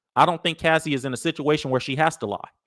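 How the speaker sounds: normal talking voice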